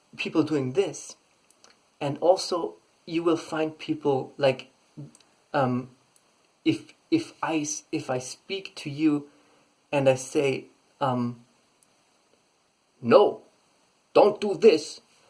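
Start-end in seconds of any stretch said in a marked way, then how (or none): 13.0-15.0 loud, forceful, clipped staccato bursts. Showing how a voice carries meaning in a warning, loud and clipped. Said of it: "it's been louder and it's been a staccato".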